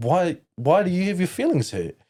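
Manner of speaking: high, mocking, confused put-on voice. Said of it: "And I'd be like".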